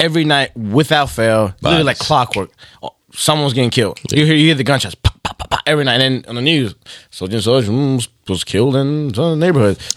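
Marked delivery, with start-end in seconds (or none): 7.2-9.8 very slow radio newsreader anchorman voice. Telling others about the neighborhood, quoting the news in a radio voice. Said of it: "that was a really good radio voice".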